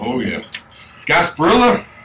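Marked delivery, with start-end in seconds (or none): 1.1-1.8 high, loud, belted yell. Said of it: "I just heard someone yell".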